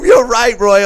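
all-out high, loud screaming. Retelling watching a fight at home on the couch: retelling screaming at the TV. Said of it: "I'm screaming at the T V".

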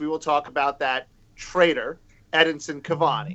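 ordinary talk

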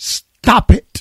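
mock curt shout, held back and mild. Telling a joke, the speaker acts out the punchline of the man giving therapy: retelling a yell. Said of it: "He yells".

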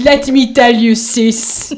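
put-on French accent. Playing a gossip who comes up to you: French accent. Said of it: "in like a French accent".

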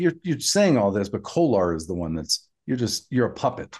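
ordinary talk

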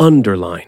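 first syllable un stressed in underline. Explaining underline's pronunciation versus determine: stress on 'un' in underline. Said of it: "the first syllable of the word is stressed".

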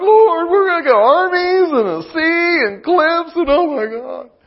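plaintive, whining, complaining lament. Retelling the Red Sea story from the Bible, mock-whining as Moses. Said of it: "Moses was whining like".

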